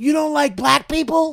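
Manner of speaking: high-pitched yell, as loud as possible. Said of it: "As loud as he could".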